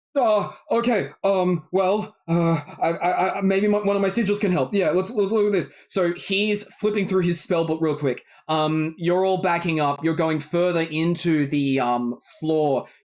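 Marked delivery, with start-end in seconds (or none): 0.2-5.7 flustered character voice, pitched higher. Celeste shouts at Adafire to do something: Adafire flustered and stammering. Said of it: "And Adafire goes".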